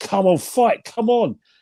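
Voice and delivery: furious, high, drawn-out yelling scream. Retelling yelling at a fighter from near ringside: imitating own screaming. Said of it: "I was screaming at him".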